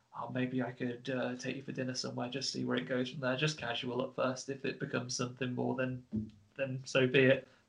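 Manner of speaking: very quiet half-whisper, barely audible. Imagining what a man half-whispered to a woman: imitating a half-whisper. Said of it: "he could have whispered".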